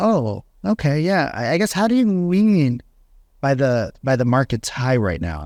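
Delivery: genuinely curious, inquisitive, wondering-aloud tone. Demonstrating how a salesperson should answer a hesitant prospect: curious tone. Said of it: "you ask in like a curious tone".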